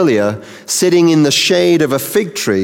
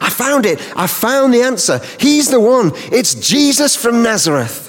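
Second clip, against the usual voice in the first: put-on eager enthusiasm, high, bouncy and excited; 8 semitones higher than usual. Retelling a bible scene as one man bounces in to another: acting out bouncy enthusiasm. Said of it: "he comes bouncing in full of enthusiasm".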